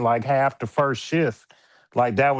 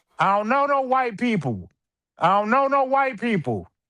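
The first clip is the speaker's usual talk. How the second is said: put-on very high, shrill, repeated yelling; 10 semitones higher than usual. Retelling what he yelled when the doctor came in: imitating own past yelling. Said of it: "I started yelling".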